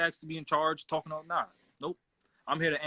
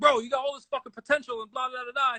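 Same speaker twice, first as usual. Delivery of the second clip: raised, yelling put-on voice; 8 semitones higher than usual. Retelling a smoke pit talk with a fellow Marine: imitating himself yelling. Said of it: "I'm yelling at him like".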